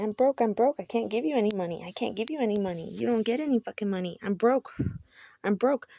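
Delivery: acted-out ranting, insistent screaming protest. Retelling what he kept screaming at her: imitating him screaming. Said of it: "He kept sitting there screaming at me".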